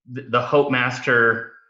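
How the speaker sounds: ordinary talk, nothing marked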